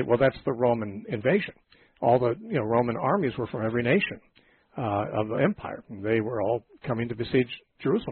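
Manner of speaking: ordinary delivery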